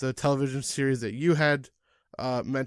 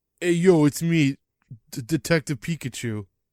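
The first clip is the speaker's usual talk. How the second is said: put-on loud Brooklyn New York accent; 3 semitones higher, 5 dB louder than usual. Speaker imitating the game character introducing himself: Detective Pikachu Brooklyn accent. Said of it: "he had like a like a Brooklyn accent".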